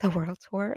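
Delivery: muttered quietly under the breath. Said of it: "under his breath".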